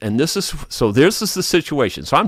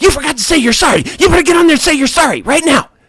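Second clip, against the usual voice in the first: very high, shrill, loud screaming; 14 semitones higher, 6 dB louder than usual. Retelling how the supervisor screamed at them: imitating someone screaming. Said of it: "she's screaming at me".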